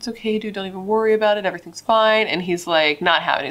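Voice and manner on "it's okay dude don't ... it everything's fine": put-on soothing, calming tone, higher. Retelling a friend trying to calm down a nervous guy, in a put-on calming tone. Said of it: "trying to calm him down".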